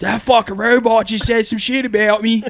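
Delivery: put-on Delaware County accent. Acting out someone from Kenzo leaning out and reacting to a robot, put on a Delco accent. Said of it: "It's more of a Delco accent".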